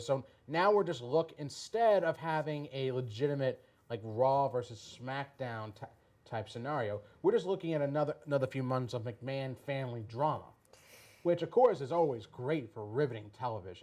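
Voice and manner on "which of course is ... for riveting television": sarcastic, ironic tone. Commenting on months of McMahon family drama ahead: sarcastic. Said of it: "notice there's no sarcasm in my voice whatsoever".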